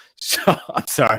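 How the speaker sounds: speaking through laughter.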